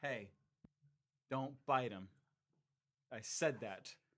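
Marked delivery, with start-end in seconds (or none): 0.0-2.1 put-on firm, clear, no-nonsense demanding tone. Retelling an order the speaker gave her: retelling a clear, demanding command. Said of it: "in a very clear, demanding voice".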